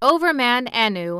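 ordinary delivery

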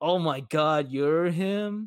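put-on very slow, mean, snotty popular-girl drawl. Recounting a story where the popular girl is rude to him: imitating a bitchy popular girl. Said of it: "she's like a total bitch to him".

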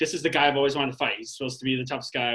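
ordinary delivery

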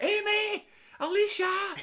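very high screaming. Retelling a woman screaming name guesses at a girl during a gig: retelling screaming names. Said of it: "She's screaming at her".

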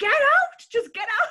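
very high, very loud shrieking scream. Retelling yelling while the dogs went for the bag, retelling own screaming. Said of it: "I'm screaming, standing screaming, going".

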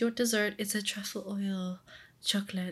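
put-on French accent. Retelling what a guy offered them, the speaker gives him a French accent. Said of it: "gave the guy a French accent".

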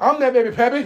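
very loud, high-pitched comic shout, belted out. Retelling an unscripted movie line: imitating Bernie Mac. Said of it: "here comes Bernie Mac".

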